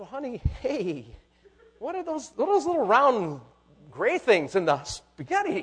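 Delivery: mock gracious, loving tone, high pitch. Acting out a husband asking his wife about the spaghetti: acting gracious, smiling. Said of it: "He's just with a smile, he's loving his wife, being gracious".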